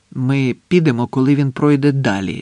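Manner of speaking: ordinary delivery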